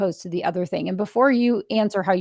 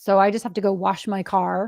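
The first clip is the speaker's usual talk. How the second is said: mock, pointed, heavy, thick sarcasm. Retelling a caller's reply to a suggestion, in a retold sarcastic reply. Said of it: "Real sar sarcastic".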